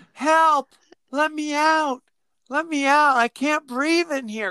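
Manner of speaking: put-on small, childlike little-girl voice. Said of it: "like a little girl".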